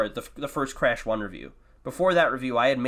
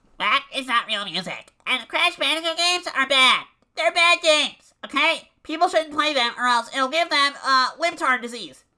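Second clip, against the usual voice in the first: very high, loud, lecturing pundit rant; 13 semitones higher, 4 dB louder than usual. Speaker performs a bit for listeners: Ben Shapiro impression. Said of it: "That was my Ben Shapiro impression".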